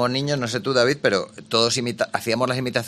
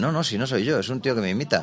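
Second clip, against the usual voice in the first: ordinary talk, nothing marked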